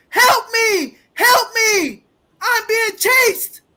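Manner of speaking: mock full-volume high-pitched, drawn-out yell. Retelling a woman running from her neighbor: imitating someone yelling for help. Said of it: "yelling at the top of her lungs".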